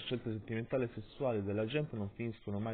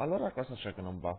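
plain reading voice

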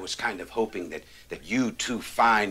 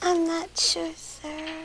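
tiny, very high, squeaky cartoon mouse voice. Cadet Hooks answers the officer's question: squeaky cartoon-mouse voice. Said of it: "She sounds like Minnie Mouse".

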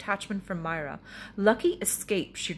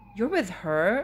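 a little taken aback, mildly surprised. Asking a man about the lady who just addressed him, somewhat surprised. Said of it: "somewhat surprised".

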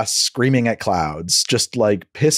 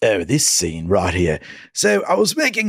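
bad put-on cranky, cantankerous voice. Retelling a director's commentaries: bad impression of a cantankerous director. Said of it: "I'm doing, like, the worst".

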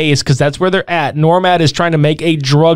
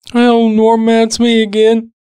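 put-on bored wrestler voice, higher; 6 semitones higher than usual. Quoting a movie hero's line: Terry Funk voice. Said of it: "He's Terry Funk".

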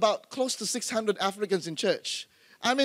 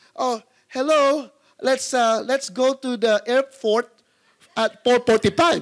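put-on Filipino-accented English, much slower; 6 dB louder than usual. Recalling their old way of speaking before unlearning it, Filipino-accented English. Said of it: "unlearn my Filipino English".

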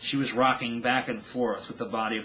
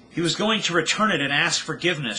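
loud, high, screamed outburst; 6 semitones higher, 7 dB louder than usual. A character speaks about her father, screaming. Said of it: "she screamed".

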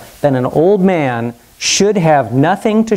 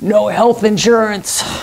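hoarse, raspy voice, pitched up; 5 semitones higher than usual. Joke teller voicing a recovering patient answering a nun: raspy voice. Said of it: "He replied in a raspy voice".

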